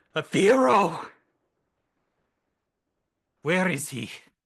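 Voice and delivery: loud, high, drawn-out yelling. Narrating a scene as a character who has been crying looks around, shouting. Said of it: "she looks around the room and just shouts".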